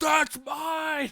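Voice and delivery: high, loud, shouted movie villain voice, owning it.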